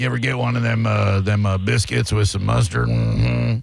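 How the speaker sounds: rough, low, raspy, creaky character voice. Asking a caller about biscuits with mustard: Sling Blade voice. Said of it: "calling that guy Sling Blade".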